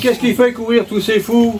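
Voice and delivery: plain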